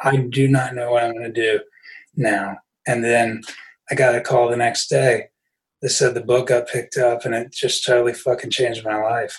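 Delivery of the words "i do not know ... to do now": mock-tearful, acted-out crying voice. Recalling crying alone in their room after a disaster, retelling own crying. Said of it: "being in my fucking room crying".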